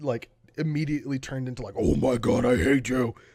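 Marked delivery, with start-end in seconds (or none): 1.8-3.1 really gruff, scary, very loud, slow yell. Describing a small girl during a board game, the speaker imitates her gruff scary voice. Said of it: "Like really gruff and scary voice".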